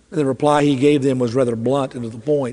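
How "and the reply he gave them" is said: ordinary delivery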